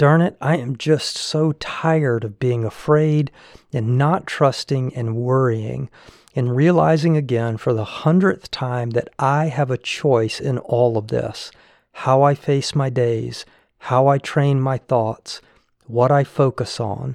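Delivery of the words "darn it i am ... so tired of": ordinary delivery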